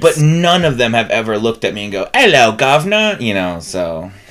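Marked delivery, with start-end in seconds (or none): 2.1-3.2 loud, high put-on British accent. Imagining a husky greeting the speaker: stereotypical British accent. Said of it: "it's how I think that British people talk".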